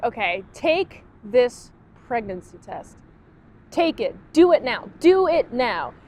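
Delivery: play-acted pushy, irritated, insistent tone. Retelling a scene where Serena orders a pregnancy test: imitating annoyed Serena. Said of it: "really annoyed".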